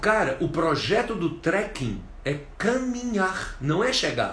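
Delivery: ordinary talk, nothing marked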